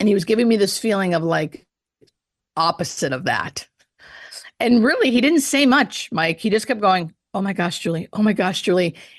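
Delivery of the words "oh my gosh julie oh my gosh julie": put-on excited, gushing, thrilled little-boy voice. Retelling what a dying man kept saying: imitating excited little-boy voice. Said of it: "in this excited kind of little, little boy way".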